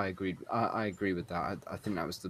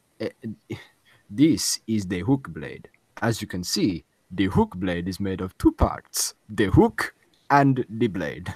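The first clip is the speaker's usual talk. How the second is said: put-on thick, heavy Italian accent laid on strongly; 11 dB louder than usual. Speaker mimicking Ezio for a friend, Ezio's thick Italian accent. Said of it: "in his thick Italian accent".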